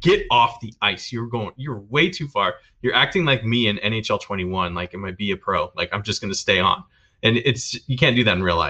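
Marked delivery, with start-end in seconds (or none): none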